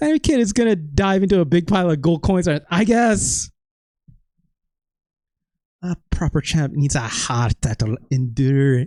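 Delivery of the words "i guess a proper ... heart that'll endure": put-on Scottish-accented reading. Recording a video for YouTube, the speaker voices a line in a Scottish accent. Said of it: "that is Scottish shit".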